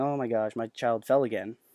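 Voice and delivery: put-on mild disappointment. Speaker retells how parents react when a child falls during the game: mock mild parental dismay. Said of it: "instead of all the parents kind of just going".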